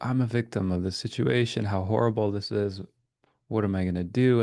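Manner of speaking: ordinary talk, nothing marked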